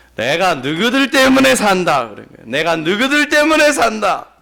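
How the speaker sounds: put-on Jeolla-accented Korean, said twice. Quoting a stock saying of the person being described: Jeolla dialect. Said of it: "전라도 사투리라는 것을 아시길 바랍니다".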